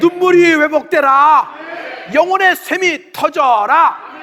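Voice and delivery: slow, loud shouting voice.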